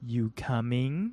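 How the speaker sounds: mock seductive, sultry voice. Retelling a movie scene, quoting a character's invitation: seductive voice. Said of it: "she says very seductively".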